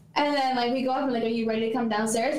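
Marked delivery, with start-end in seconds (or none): none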